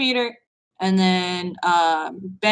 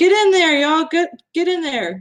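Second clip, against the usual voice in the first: high, urgent shouting in character voice; 8 semitones higher, 4 dB louder than usual. Playing a character giving covering fire, calling allies in: shouting in character. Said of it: "I'm just shouting".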